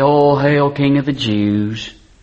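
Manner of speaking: play-acted derisive, jeering, drawn-out mocking delivery. Retelling how they robed him and bowed down: acting out a mocking hail. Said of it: "bowed down mockingly".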